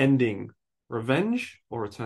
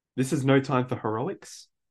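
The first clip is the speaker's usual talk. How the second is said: plain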